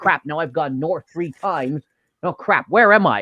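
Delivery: plain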